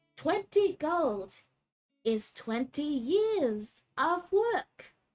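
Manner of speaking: very slow, talking-down voice, word "years" drawn out. Voicing a character who thinks the adventurers are children: very slow, condescending voice. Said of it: "starts speaking in a very slow accent, like he thinks you're children".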